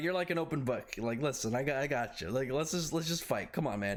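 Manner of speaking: usual speaking voice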